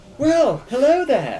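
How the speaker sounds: very high innkeeper voice. Voicing a large portly woman at the inn's bar: portly innkeeper woman voice. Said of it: "a kind of large, portly woman ... And she's like".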